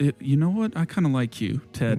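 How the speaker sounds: soft voice brought down, kept private. Voicing a character speaking to Ted, in a lowered voice. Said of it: "She kind of lowers her voice again".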